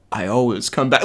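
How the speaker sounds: hushed, half-whispered stage whisper aside. Retelling how a kid next to them half-whispered to a friend: imitating a half-whisper. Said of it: "he just whispered to his friend".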